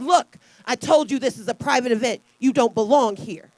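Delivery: put-on disgusted voice. Retelling what a man said to him and his parents, imitating his disgusted voice. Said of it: "disgust in his voice".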